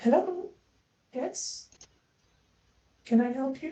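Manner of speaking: hushed, very soft, very high-pitched voice. The narrator voices someone the players hear greeting them: very soft voice. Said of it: "you hear a very soft voice".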